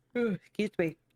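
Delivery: talking mid-yawn, yawning through the words. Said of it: "Stop yawning".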